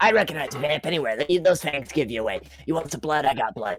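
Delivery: voice-changed character voice. Serving drinks in character as Cap: Cap voice through voice changer. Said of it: "whenever I speak as Cap".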